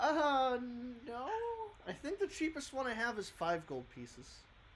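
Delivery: very high, sing-song, swooping woman shopkeeper voice. A shopkeeper answers a customer's question about harp prices: woman shopkeeper character voice. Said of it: "and she leads you across the wall to a couple of different, / and she goes, / Uh, that harp I can sell you uh".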